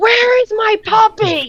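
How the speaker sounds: screaming. Role-playing a character banging on another's door, screaming. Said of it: "And just start screaming".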